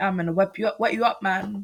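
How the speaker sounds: silly, put-on, fake British accent. Retelling what a teenage nephew said: imitating a british accent. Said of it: "the whole time it was, like, British accent".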